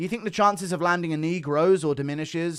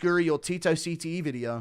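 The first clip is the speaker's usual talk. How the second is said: ordinary talk, nothing marked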